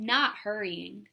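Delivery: plain reading voice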